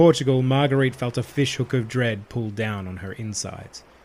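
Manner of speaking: ordinary delivery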